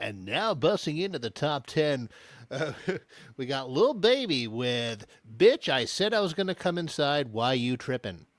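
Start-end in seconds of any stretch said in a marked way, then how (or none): 0.0-7.3 put-on radio announcer voice, like a radio DJ. Walking up to a man making pizzas and doing a Casey Kasem impression. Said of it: "I do a, a Casey Kasem impression. I go".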